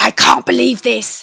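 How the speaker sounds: put-on angry ranting voice. Retelling how an ex-husband phoned up: imitating an angry ex-husband. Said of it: "so angry, so angry".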